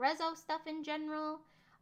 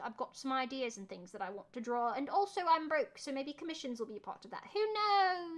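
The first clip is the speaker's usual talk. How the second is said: casual, chatty, fake British accent; 2 semitones lower than usual. Announcing plans to draw again and maybe take commissions, in a put-on British accent. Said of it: "Why am I talking in a British accent?".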